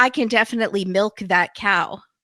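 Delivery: plain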